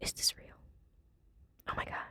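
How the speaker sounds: barely audible, hushed, breathy whisper. Reacting to a picture of a moose, whispering. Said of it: "Why am I whispering?".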